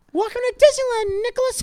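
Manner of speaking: pitch pushed way up into squeaks. On a comedy podcast, greeting a co-host, as Mickey Mouse from South Park. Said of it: "It's like Mickey Mouse from South Park".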